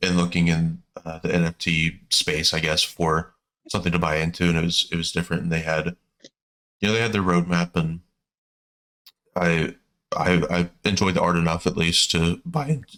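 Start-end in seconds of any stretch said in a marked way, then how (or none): 7.7-13.0 slow speech with voice cracking partway through. Chatting on a recorded show, the speaker's voice cracks mid-sentence; voice cracking. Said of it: "voice crack".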